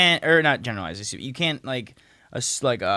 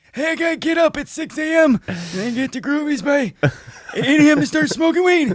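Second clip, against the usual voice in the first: put-on very high, loud old grandpa voice; 13 semitones higher, 5 dB louder than usual. Doing a bit as a grandpa who gets up early, put-on grandpa voice. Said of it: "That's I'm done with that voice".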